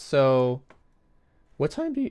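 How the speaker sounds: sudden crack in the voice mid-line. Speaker starts asking guests their written-down questions, voice cracking. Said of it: "that was a crazy voice crack".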